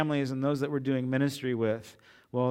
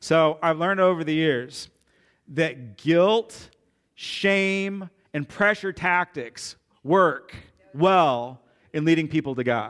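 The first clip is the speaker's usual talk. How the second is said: slow, sarcastic, tongue-in-cheek overstated delivery; 2 semitones higher, 4 dB louder than usual. Speaking to a church audience, saying the opposite of what is meant: sarcastic tone. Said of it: "This is my sarcasm".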